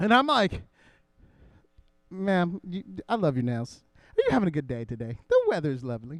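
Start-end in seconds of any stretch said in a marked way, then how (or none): 2.1-6.2 acted-out flirty, mock-flirtatious delivery. Speaker retells complimenting a lady to her face, retelling a flirty line. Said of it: "I become the biggest flirt".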